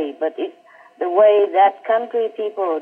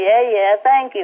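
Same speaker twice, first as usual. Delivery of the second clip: sarcastic, brushing-off tone. Speaker retells a man laughing off their remark about blessing his country: retelling a sarcastic thank-you. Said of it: "like sarcastically".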